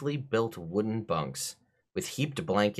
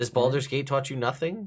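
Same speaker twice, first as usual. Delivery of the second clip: pitched-up, sharp half yell; 5 semitones higher than usual. Answering a player's question about a surprise round: yelling. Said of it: "why are you yelling at me right now".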